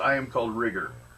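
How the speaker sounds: dry adult-sounding voice. Voicing a young cyborg boy introducing himself: dry, almost adult voice. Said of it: "In a dry, almost adult voice".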